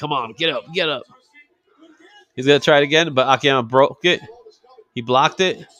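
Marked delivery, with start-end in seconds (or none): 0.0-1.0 put-on urgent, pleading, begging tone. Retelling a wrestler's words to his downed opponent: imitating someone begging. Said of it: "he's begging Akiyama".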